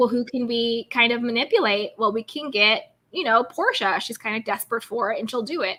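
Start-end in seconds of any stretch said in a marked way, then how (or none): none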